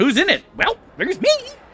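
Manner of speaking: mock squeaky goblin-like voice. Imitating how the own voice sounds on stream playback: imitating own high goblin-like voice. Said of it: "Sound like the fucking goblin from World of Warcraft".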